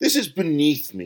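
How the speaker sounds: huffy, snapping, curt voice. Frederick, told to play at the piano, rejects the music, snapped. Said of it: "snapped Frederick".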